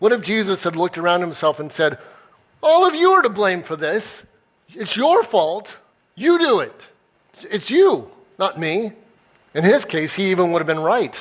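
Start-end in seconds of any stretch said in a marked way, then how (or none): 2.6-8.9 put-on haughty, arrogant voice, pitched up. Acting out an arrogant blaming response Jesus could have given: arrogant blaming. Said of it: "the arrogant blaming path".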